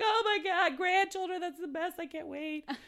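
weepy, very high-pitched, loud, shrill sobbing. Retelling the mom's reaction to a future grandchild's name, imitating mom sobbing. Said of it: "starts sobbing like".

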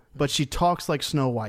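plain

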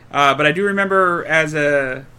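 ordinary talk, nothing marked

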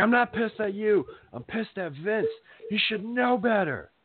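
very high, ripping, angry yell. Retelling Steve Kerr ripping into a player: imitating Steve Kerr yelling. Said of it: "yelling at him".

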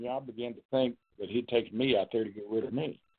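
ordinary delivery

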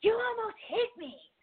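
very high, furious, angry yelling scream. Retelling how a woman yelled at the speaker from outside the car, an angry scream. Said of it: "like scream, like really angry at me".

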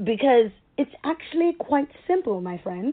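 rehearsed, put-on English accent attempt. Speaking to listeners, the speaker tries out an English accent they've been practicing. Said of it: "in my English voice that I've been working on".

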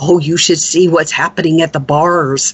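whispered speech. Retelling what the postmistress leaned over and said: imitating someone whispering. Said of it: "the postmistress whispered to me".

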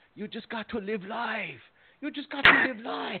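high, shrill screaming yell at full volume. Retelling what a guy yelled back at the speaker, retelling a yell. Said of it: "the guy yells back at me".

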